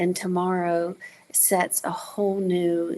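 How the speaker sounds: ordinary delivery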